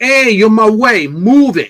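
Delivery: brash put-on New York street-gangster accent. Speaker shows how they'd talk if from new york, in a put-on new york accent. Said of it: "from New York, I'd be like".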